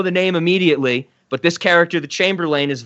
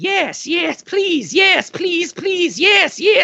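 very high-pitched put-on turkey voice; 14 semitones higher than usual. Retelling a scene, the speaker voices the turkey answering Kira: turkey voice. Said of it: "the turkey just goes".

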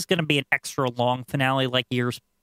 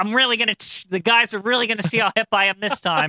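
all keyed-up, eager, pitched-up, boastful voice; 8 semitones higher, 3 dB louder than usual. Imagining him showing up to work with a new haircut: imitating someone excited. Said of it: "I could see him all excited".

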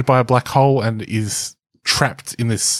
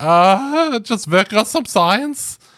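bad German accent, very high, drawn-out "uh"; 9 semitones higher than usual. Imagining someone busting in on Einstein, answering in a bad German-accent Einstein voice. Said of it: "that's a bad german accent einstein".

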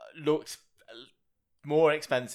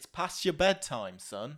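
put-on northern English accent; 4 semitones higher, 3 dB quieter than usual. Recounting a scene where he speaks to a young kid; Ben Kingsley northern accent. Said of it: "he's gone with a northern accent".

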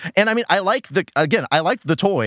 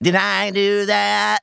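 rough, creaky, raspy put-on nerd voice; 4 semitones higher than usual. Speaker quotes the Family Matters character's catchphrase, Urkel impression. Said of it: "That's him saying".

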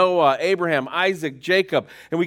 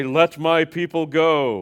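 big, resounding, booming voice, very slow. Summarizing a Bible book, putting on a booming voice for its famous line. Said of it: "We get our booming voice".

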